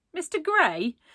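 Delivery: derisive, mocking, very high-pitched voice. Narrator voices a girl answering a boy's suggestion, in a mocking tone. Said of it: "She asked in a mocking tone".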